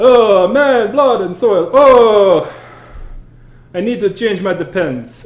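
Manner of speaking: put-on high Italian-accented vampire voice, long drawn-out oh. Playing an incontinent vampire character, in an Italian-accented vampire voice. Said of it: "my vampire is Italian for some reason".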